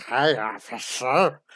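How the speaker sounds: put-on seductive, sexy bedroom voice. Redoing an earlier joke bit for a listener: put-on sexy bedroom voice. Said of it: "sexy cop in the bedroom voice".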